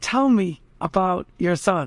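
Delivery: put-on hushed whisper. Retelling an elderly woman speaking to a young man's father, retelling a whisper. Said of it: "she whispers".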